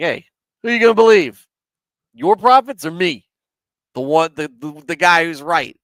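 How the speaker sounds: put-on loud New York accent. Telling the chat about a prophet asking whom they will believe: Jeremiah in a New York accent. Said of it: "You can almost hear Jeremiah in a New York accent".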